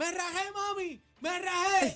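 very high-pitched, slow, drawn-out shout. Recalling lying hurt on the floor, calling out to someone downstairs; retelling a shout. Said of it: "Y yo le grito".

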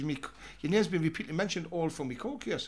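plain

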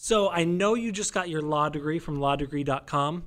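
ordinary delivery

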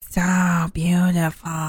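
voice dropped low. Trying out an impression that the speaker admits still needs work: Jennifer Coolidge impression. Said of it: "I gotta work on my impression still".

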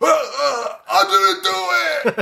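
very high, drawn-out, overacted bad scream. Speaker mocking Lance's bad acting in a movie, Lance screaming imitation. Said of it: "he's screaming".

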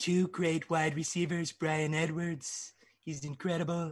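every word drawn out slowly. Talk up your two wide receivers to the others, doing a Donald Trump bit. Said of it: "don't interrupt the overset Trump bit".

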